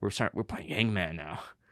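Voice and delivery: tiny, soft, small-sounding little voice. Recalling Matthew starting Hangman at the library, Matthew's little voice. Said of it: "in that like that little voice".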